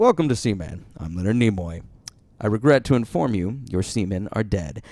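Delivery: put-on game narrator voice. Retelling the game's message after spring break: Leonard Nimoy voice. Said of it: "a game narrated by Leonard fucking Nimoy".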